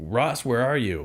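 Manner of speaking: mock urgent, frantic calling out. Retelling a foot chase, imitating Rick yelling frantically. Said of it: "I hear Rick yelling".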